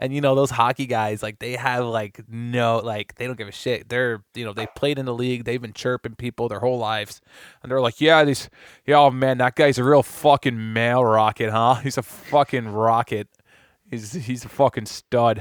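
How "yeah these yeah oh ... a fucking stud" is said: put-on loud, drawn-out Boston accent. Imitating hockey podcast guys praising a player: Boston accent. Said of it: "talking with their fucking accent and shit, like they're from Boston".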